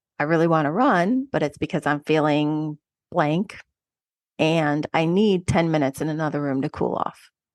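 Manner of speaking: ordinary talk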